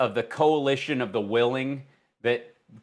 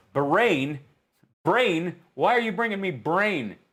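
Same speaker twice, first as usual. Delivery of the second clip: "Bahrain" mangled into "brain", pitched up; 5 semitones higher than usual. Act out him arguing with Jared, in a Donald Trump voice, mispronouncing Bahrain. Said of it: "he's not pronouncing it properly".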